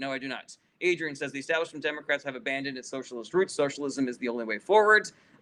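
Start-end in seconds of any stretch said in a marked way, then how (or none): none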